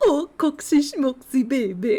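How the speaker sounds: put-on cute, high, slow cooing baby talk. Imitating a buff russian guy talking to his small dog, in a cute high-pitched voice. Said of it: "talks to the dog in a really like cute high pitched voice".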